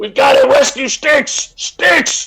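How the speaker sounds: very high-pitched cry in a character voice. Dashing towards the bridge in character to rescue Sticks: shouting in character. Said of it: "and I'm shouting".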